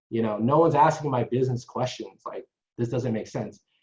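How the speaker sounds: ordinary talk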